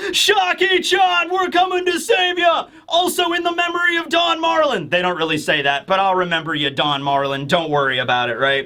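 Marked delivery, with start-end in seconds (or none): 0.1-4.9 play-acted, very high-pitched, excited shrieking scream. Recapping a story where two characters scream to a friend they're rescuing, retelling a scream. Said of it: "start screaming like".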